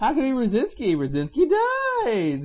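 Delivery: very high, swooping mock disbelief, obviously kidding. Showing how someone jokes when denying a theory: imitating a raised, joking question. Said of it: "You have to raise your voice like that".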